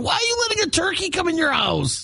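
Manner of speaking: high-pitched scream. Retelling what they screamed into their phone back then, retelling screaming into phone. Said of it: "As I'm screaming into my phone going".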